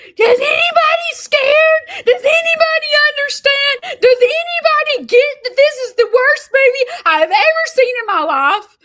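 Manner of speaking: shrill scream, very high and very loud. Retelling watching a horror movie and starting to scream: retelling a scream. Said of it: "I start screaming".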